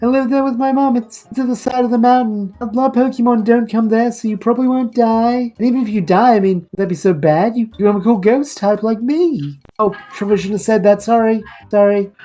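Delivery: put-on high, chirpy, eager young ghost girl voice.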